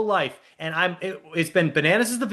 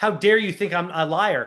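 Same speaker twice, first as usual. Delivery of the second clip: mock indignant voice. Retelling how a cast member denied lying: imitating Aneesa's indignant tone. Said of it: "And she says it with, like, such, like".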